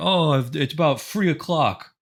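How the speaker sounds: mocking put-on British accent, th as f, high and slow. Joking with friends about how British people talk, in a mocking British accent. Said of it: "how stupid British people sound when they pronounce their th's like f's".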